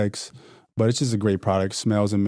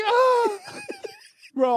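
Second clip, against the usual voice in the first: very high, swooping, wailing shriek of pain. Retelling when a wasp stung Spencer in the back, imitating Spencer's shriek. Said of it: "he like shrieks like".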